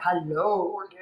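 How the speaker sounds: very deep voice, pushed way down. Speaker imitating a man who said hello: very deep voice. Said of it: "Did he have a very deep voice?".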